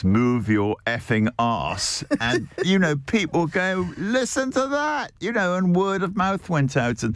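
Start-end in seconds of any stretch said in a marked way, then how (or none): 0.0-2.0 robotic, synthesized, digital machine voice. Speaker quoting a robot in their first restaurant, in a robotic digital voice. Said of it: "digital voice".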